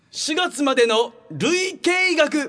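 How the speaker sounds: slightly high, slow announcing with long suspenseful pauses. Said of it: "テレビの方の何でも鑑定団をさ、ちょっと意識してやってた".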